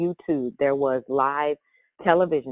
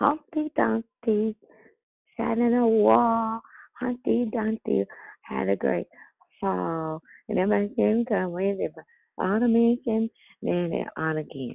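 put-on little-child voice, higher and slower; 8 semitones higher than usual. Showing how a four-year-old niece says it, in [name]'s four-year-old voice. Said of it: "like my little four-year-old niece".

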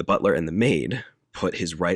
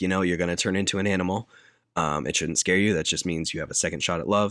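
plain

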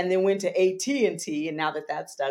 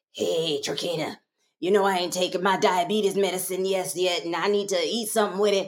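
put-on deep, low raspy voice. Recalling a woman who would come in, imitating her deep raspy voice. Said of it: "deep raspy voice".

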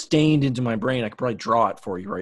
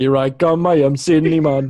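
put-on Jamaican accent, higher and louder; 3 semitones higher, 8 dB louder than usual. Imitating the cinnamon guy from the Apple Jacks ad: Apple Jacks Cinnamon voice. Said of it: "Why is he Jamaican?".

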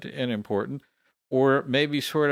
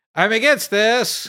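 stiff at-attention delivery, very loud, pitched very high; 10 semitones higher, 7 dB louder than usual. Retelling a habit of standing at attention: imitating own loud declaration. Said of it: "in a very loud voice".

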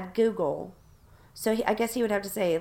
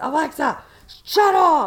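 very loud, high-pitched yelling; 7 semitones higher, 10 dB louder than usual. Speaker acting out how Keith yells at the Alexa every night, imitating Keith yelling. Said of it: "he yells at her every single night".

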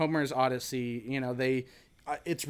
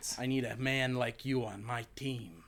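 put-on strong Staten Island accent, quieter; 5 dB quieter than usual. Pitching a joke after-credits scene where Captain America approaches Mario, Captain America with Staten Island accent. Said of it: "really strong like Staten Island accent".

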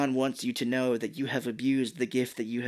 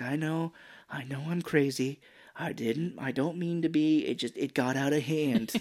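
put-on pleading voice; 2 semitones higher than usual. Retelling a scene where Nancy pleads with Sarah: imitating Nancy pleading. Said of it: "Nancy tried pleading with her here".

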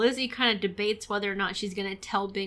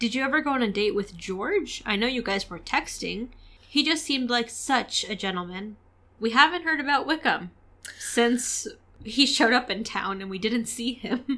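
plain

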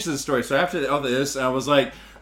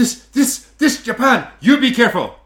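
flustered, shaken, raised, stammering broken-English delivery; 9 semitones higher, 5 dB louder than usual. Retelling a shaken old man's warning: imitating a shaken old man's broken English. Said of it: "He got really shook up".

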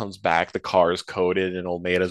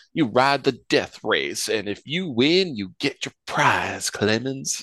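put-on heavy southern Texas accent, laid on thick, pitched up; 5 semitones higher than usual. Quoting Almeida's line to Clemens about the death race, in Almeida's southern Texas accent. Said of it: "the most southern like Texas accent ever".

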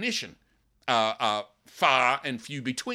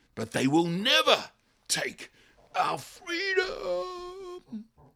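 put-on passionate, rousing delivery, higher pitch. Retelling a film hero's speech to terrified massed fighters: imitating William Wallace's passionate cry. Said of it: "he cries it out passionately".

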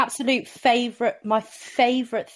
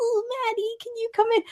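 imitated put-on baby voice, much higher; 13 semitones higher than usual. Quoting how a woman would call someone in, the speaker imitates her baby voice. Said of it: "she would do baby voice".

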